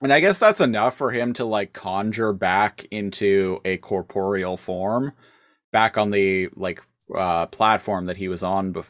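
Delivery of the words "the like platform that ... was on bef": normal talking voice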